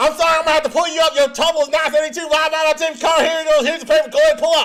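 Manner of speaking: very rapid-fire speech, very high-pitched and loud. Retelling what a drive-thru worker said at the window: imitating very fast talking. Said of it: "she's talking like a mile a minute".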